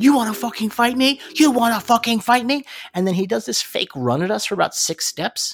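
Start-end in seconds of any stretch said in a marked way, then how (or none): 0.0-2.6 loud, high-pitched, aggressive hollering yell. Speaker retells a man down the street challenging them; imitating a man yelling. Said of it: "the dude down the street yells".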